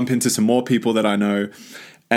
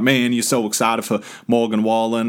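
put-on South Carolina local accent. Retelling what people in a stadium drink line said: put-on South Carolina accent. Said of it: "that's my, uh, South Carolina accent".

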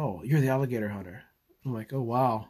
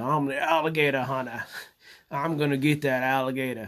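put-on Australian accent. Joking around while cooking on a fire, imitating his friend in Australia's accent. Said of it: "Imitating my friend in Australia's voice".

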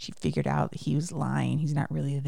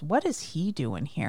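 ordinary delivery

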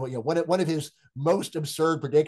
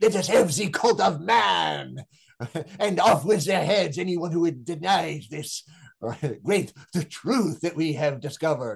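put-on French accent with the word "man" drawn out; 2 semitones higher than usual. Acting out what they would say, the speaker repeats the slogan in a French accent. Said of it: "I'll do that with a French accent".

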